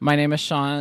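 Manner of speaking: mocking put-on voice. Mocking a co-host by repeating his introduction: mocking Sean. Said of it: "I was gonna mock him real quick".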